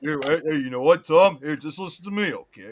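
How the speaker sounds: fake Philadelphia accent. Talking to Tom about getting Evil Dead, in a Sylvester Stallone Philly accent. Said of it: "I'm trying to talk from Philly".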